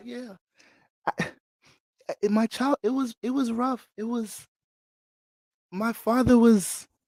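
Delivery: gentle, soft, very high angelic voice. Imitating what Mike would say himself, in Mike's soft angelic voice. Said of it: "Mike's voice angelic as hell, soft ass angelic voice".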